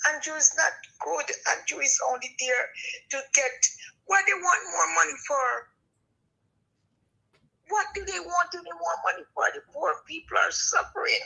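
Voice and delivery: labored, breath-hampered voice, pitched high. A speaker with asthma talking in a conversation: asthmatic voice. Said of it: "Sorry about my voice".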